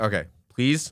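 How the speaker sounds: put-on very careful, cautious manner. Acting out being pulled over and handing over a license, very careful. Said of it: "I'm gonna be so careful and be like".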